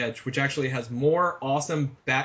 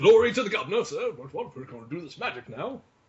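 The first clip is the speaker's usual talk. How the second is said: British accent, laid on full, put-on; 4 semitones higher than usual. Joking about how a film could explain an american character: mock british accent. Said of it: "going full Brit".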